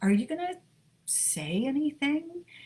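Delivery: hesitant, careful tone. Retelling what the husband asked earlier this morning, imitating a tentative voice. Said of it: "in this sort of tentative voice".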